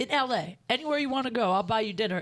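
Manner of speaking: ordinary delivery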